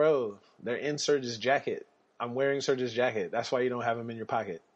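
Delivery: ordinary delivery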